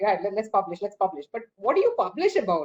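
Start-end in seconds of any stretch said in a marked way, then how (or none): none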